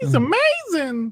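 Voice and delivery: very high-pitched put-on voice. Answering a request to say the line in Reggie's voice: Reggie voice. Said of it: "how do you say it in Reggie's voice?".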